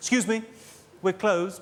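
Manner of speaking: haughty, snooty shop-assistant voice. Imitating staff behind a department store counter at day's end, mock-snooty shop assistant voice. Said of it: "you'll get from behind the counter quite a snooty voice".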